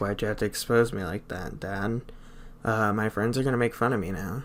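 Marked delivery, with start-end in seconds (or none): none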